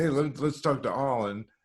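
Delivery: normal talking voice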